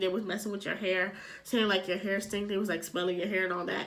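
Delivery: normal talking voice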